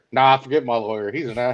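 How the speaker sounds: normal talking voice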